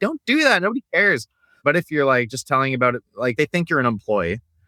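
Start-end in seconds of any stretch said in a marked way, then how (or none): 0.0-1.3 very high-pitched, fed-up, exasperated yell. Speaker describing their reaction to businesses posting boring social media content, retelling a scream. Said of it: "I'm like screaming at them".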